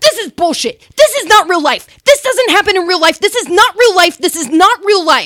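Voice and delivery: high, loud, repeated screaming, shouted rant. Retelling how a man stood up and ran off: imitating a man screaming. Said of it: "run full speed away from us screaming".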